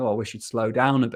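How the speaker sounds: plain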